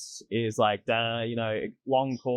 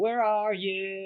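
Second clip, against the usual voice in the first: over-the-top exaggerated American accent, pitched up; 8 semitones higher than usual. Discussing how accents come from vowel placement, demonstrating: exaggerated american accent. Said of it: "as long as you're not doing the like".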